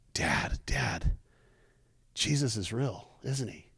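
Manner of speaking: slow, crying, tearful pleading tone. Retelling a son pounding on the door at night: imitating a tearful son. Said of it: "he's just in tears".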